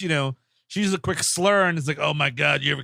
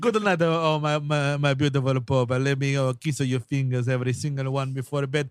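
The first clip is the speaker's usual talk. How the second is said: put-on Latin accent; 3 semitones lower than usual. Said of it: "Is that a Latin accent?".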